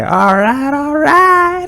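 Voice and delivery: very high, loud screechy yell.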